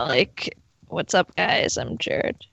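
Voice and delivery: slow, creaky vocal-fry drawl throughout. Speakers discuss vocal fry; one imitates Jared: Jared impression with vocal fry. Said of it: "My Jared impression is just vocal fry".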